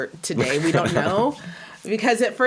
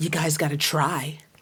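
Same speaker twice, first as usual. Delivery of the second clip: put-on intimidating, menacing tone; 3 semitones lower than usual. Retelling what a player's wife said through the net, imitating an intimidating warning. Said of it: "that intimidating, like, thing that she tried".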